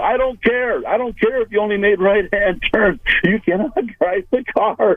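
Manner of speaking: shrill, hollering, screaming rant. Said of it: "he's screaming and hollering at her".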